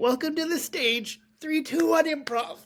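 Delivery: very high-pitched, tearful, theatrical delivery. Retelling how a host, in tears, introduced the improv show: imitating a tearful announcement. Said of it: "tears start coming down her eyes".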